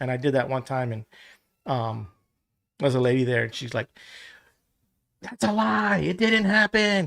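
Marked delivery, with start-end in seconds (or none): 5.2-7.1 acted shout, high-pitched and drawn out. Retelling a lady objecting to a joke: imitating a woman yelling. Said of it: "She starts yelling at me".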